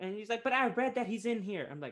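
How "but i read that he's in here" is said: put-on Boston accent, older lady voice, pitched up. Retelling an older lady's words at a mayonnaise commercial, imitating a Boston accent. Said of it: "this lady in her Boston accent".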